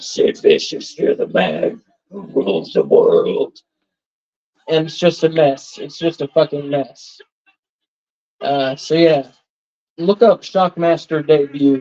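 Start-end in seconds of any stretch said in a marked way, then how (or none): 0.0-3.6 put-on voice, rough, creaky and raspy. Retelling a wrestling debut where someone starts doing the voice: Shockmaster voice. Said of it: "he starts doing the voice".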